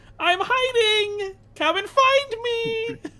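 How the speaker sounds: tiny, very high-pitched goblin voice. Recounting a scene where the hidden boyfriend calls out: little goblin voice. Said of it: "this little goblin voice that goes".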